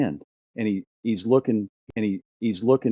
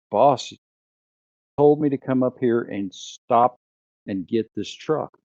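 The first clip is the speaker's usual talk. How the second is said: normal talking voice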